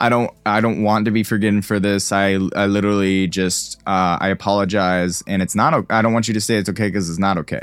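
ordinary talk

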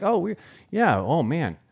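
put-on earnestness. Retelling a woman's small talk about their trip, imitating an earnest tone. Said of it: "She's like so earnest".

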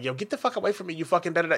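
rude, disrespectful, dismissive tone. Acting out someone's reply to a polite approach: imitating a disrespectful reply. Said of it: "and you get disrespectful".

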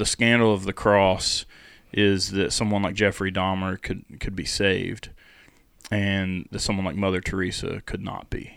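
ordinary talk, nothing marked

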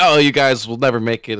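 normal talking voice

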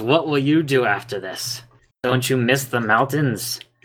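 put-on elderly dwarf woman character voice. Narrating a scene, voicing an old dwarven woman talking to a hill dwarf, old dwarven woman voice. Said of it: "The old dwarven woman?".

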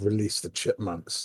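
conspiratorial schemer voice. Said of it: "When you get really conspiratorial".

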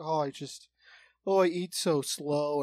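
put-on very slow elderly lady voice, Midwestern accent. Retelling what an old Midwestern lady at a table said: imitating an old Midwestern lady. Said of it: "These old Midwestern ladies, like this one lady".

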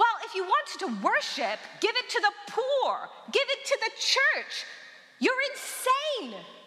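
high, mocking, scornful scolding tone.

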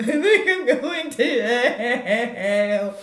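mock very loud, very slow, high, drawn-out tearful sobbing. Retelling a phone call to mother after acceptance: imitating loud sobbing. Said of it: "burst into loud, sobby tears".

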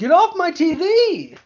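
mock very high, very slow, drawn-out scream. Retelling screaming at the television at an actor: imitating own scream. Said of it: "that's when I screamed at my television".

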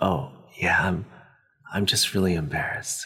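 put-on whispering. Retelling how she whispered back when asked if she was hurt: retelling a whisper. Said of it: "she kind of whispers back to me".

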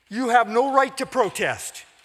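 high-pitched, very loud, shrill, full-throated angry shouting. The minister answers Kays's protest against his sermon, shouting. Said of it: "fairly shouted the minister".

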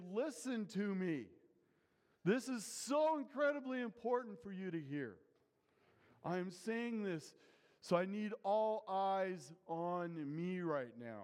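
put-on pleading, begging tone, straining for attention. Retelling Jesus urging his disciples to listen: imitating Jesus pleading. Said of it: "Jesus is pleading".

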